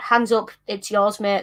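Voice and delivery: ordinary delivery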